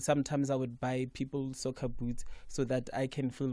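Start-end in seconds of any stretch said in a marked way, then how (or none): none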